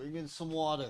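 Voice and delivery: put-on soft, offhand New Jersey accent. A man offering his guest a drink calls for water, in a Jersey accent. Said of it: "that sounded like a Jersey accent".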